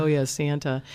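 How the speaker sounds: ordinary delivery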